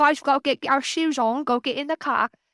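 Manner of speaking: cocky South London accent. Speaker showing how they hurry the kids into the car, in a put-on cocky south london accent. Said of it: "really cocky and I'll be like from the south".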